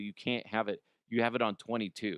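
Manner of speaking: ordinary talk, nothing marked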